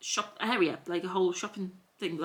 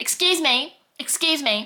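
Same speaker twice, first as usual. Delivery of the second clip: put-on Scouse accent, raised pitch, very slow; 8 semitones higher, 8 dB louder than usual. Retelling a stranger interrupting while the speaker scrolled TikTok, put-on Scouse accent. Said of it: "in a Scouse accent".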